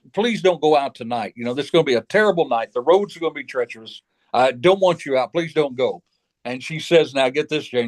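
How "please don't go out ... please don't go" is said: put-on begging, pleading voice. Retelling a father's warning before a stormy night: imitating a father begging. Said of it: "my father begged me".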